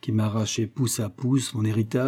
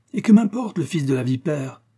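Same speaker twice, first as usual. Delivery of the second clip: impetuous, hot, cutting-in delivery; 4 semitones higher, 3 dB louder than usual. The husband cuts off the sick one's defence of Charles, an impetuous interruption. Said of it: "Interrompit impétueusement son mari".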